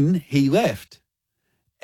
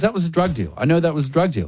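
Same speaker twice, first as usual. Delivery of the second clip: ordinary talk, nothing marked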